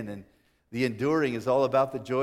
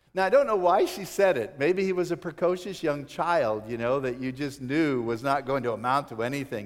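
plain

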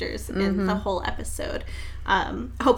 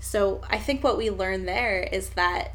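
plain

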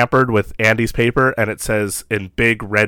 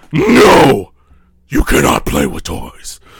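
very slow, deep, loud, dramatic dark-hero voice; 4 semitones lower, 6 dB louder than usual.

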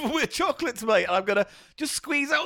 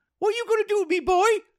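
put-on grandma voice, high-pitched; 7 semitones higher than usual. Joking that the nan has been brought in, speaking in an old nan voice. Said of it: "I just brought my nan in".

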